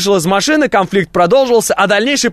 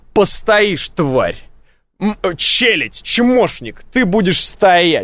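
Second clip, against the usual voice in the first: mock-haughty, contemptuous, much slower. Acting out a man on a crosswalk who makes you wait, with a mock-haughty put-down. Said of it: "смотрит на тебя как бы свысока".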